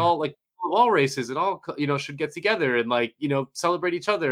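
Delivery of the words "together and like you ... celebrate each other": ordinary talk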